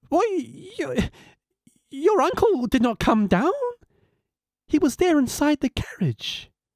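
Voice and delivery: astonished, surprised, pitched very high. The mother answers her son Gulu's story about his uncle, in a surprised voice. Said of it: "In a surprised voice".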